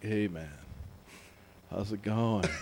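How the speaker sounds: put-on low, spaced-out stoner voice. Describing the stoner friend everyone had: imitating a stoner friend. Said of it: "the friend you always had who's like".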